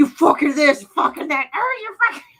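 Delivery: shrill, very high-pitched put-on Cockney accent. Retelling a dubbed clip of two British guys, imitating a Cockney accent. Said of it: "like I guess Cockney or something".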